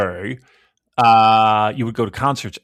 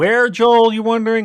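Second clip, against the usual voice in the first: put-on helium voice, higher pitched; 12 semitones higher, 3 dB louder than usual. Quoting a documentary line as a helium-filled Andy Taylor: helium-filled Andy Taylor voice. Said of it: "As a, uh, helium-filled Andy Taylor would say".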